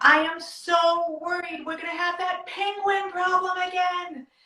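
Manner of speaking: play-acted loud big voice. Speaker retells what they said to a child instead of yelling, retelling using a loud voice. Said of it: "I used my loud voice to say".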